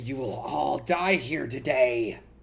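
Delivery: slow, rasping, eerie, spooky voice. Narrating a game scene, voicing an unseen speaker to the players: raspy voice. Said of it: "the raspy voice saying".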